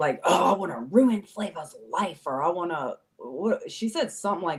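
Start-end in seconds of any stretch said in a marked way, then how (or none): 0.2-2.2 eerie, possessed, demonic-sounding voice. Retelling what a woman once said to the speaker, in a demon voice. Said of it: "almost turned into like a demon voice".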